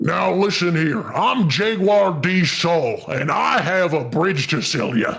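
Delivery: electronically altered voice. Showing off a newly installed voice mod with a made-up character: weird voice-mod voice. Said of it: "I installed this, so I can do this now".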